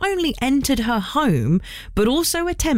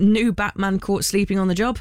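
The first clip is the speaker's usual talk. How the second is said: ordinary delivery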